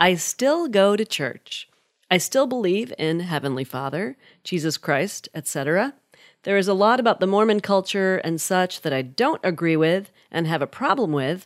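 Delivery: ordinary talk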